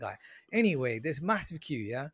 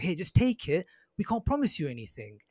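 put-on aggressive tone, woman's voice; 3 semitones higher than usual. Retelling what a woman told them: imitating an aggressive woman. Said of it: "pretty aggressive and she's like".

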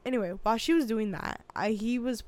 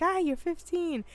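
high-pitched, knowing "ah". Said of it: "but I was like".

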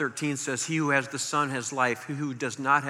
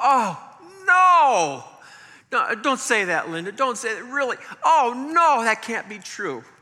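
put-on very high, swooping, stricken, anguished cry of disbelief; 10 semitones higher, 6 dB louder than usual. Retelling hearing of a nephew's death: retelling own anguished cry. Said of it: "I just literally cried out".

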